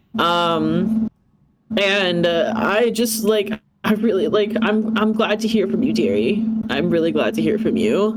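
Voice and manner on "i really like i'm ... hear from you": mock voice, worried, earnest, full of concern. Retelling what a woman said to the listener on a live recording: imitating worried concern. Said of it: "she was seemed legitimately worried for you".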